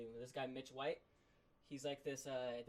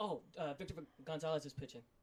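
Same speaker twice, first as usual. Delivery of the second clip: mock keyed-up, thrilled, eager tone; 3 semitones higher, 4 dB louder than usual. Retelling watching the game when a pitcher came on: imitating own excited remark. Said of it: "really excited about it".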